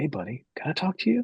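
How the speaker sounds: soft, leaning-in delivery. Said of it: "Jeremy kind of leans in and goes".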